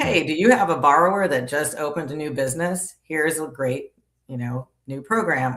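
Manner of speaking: plain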